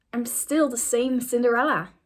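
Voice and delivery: ordinary talk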